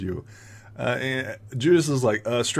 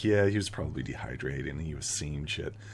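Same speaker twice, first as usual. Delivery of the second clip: hushed, soft half-whispered aside; 8 semitones lower, 7 dB quieter than usual. Voicing townsfolk who dismiss a player's warning: half-whispering. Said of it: "you hear this whispering".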